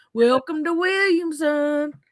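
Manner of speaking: put-on country accent, West Virginia style. Describing how it sounds, imitate somebody from West Virginia in a country accent. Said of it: "like that country accent".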